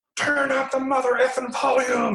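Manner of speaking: very high, stretched-out, drawn-out scream. Retelling how a man came down the hallway: imitating a man screaming. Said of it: "and he's screaming".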